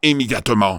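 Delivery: ordinary delivery, nothing marked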